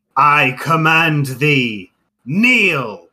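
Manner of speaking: thunderous, booming, loud spoken delivery. Narrating a figure who points at someone and commands them: booming voice. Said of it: "in a booming voice utters".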